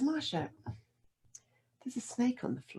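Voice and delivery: frightened voice held very calm, soft and high. Retelling a warning about a snake, imitating a forced calm voice. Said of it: "she's using this very calm voice".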